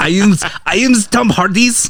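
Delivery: put-on really terrible German accent. Imagining how a man would have spoken, using a really terrible german accent. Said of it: "a really terrible German accent".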